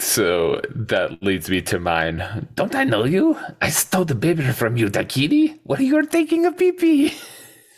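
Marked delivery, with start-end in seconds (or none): 2.5-7.1 very high villain voice swinging wildly in pitch. Speaker gives his own movie quote in turn: Doofenshmirtz voice. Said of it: "I don't know why I turned into Doofenshmirtz there".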